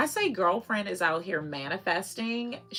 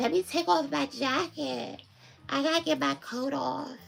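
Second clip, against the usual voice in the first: put-on rough, creaky, high, raspy, put-upon little-girl voice; 7 semitones higher than usual. Mimicking the little girl at morning drop-off, in a raspy little-girl voice. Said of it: "her raspy voice".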